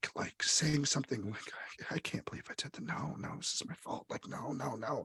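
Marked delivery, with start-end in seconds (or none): 1.9-5.1 despairing, wallowing whisper, half to herself. Voicing a fallen character blaming herself: whispering to herself, wallowing. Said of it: "whispering to herself".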